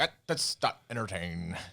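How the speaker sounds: slow, drawn-out newscaster voice with vibrato. Imitating how another speaker read out a handle: imitating Walter Cronkite vibrato. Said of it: "You're just like".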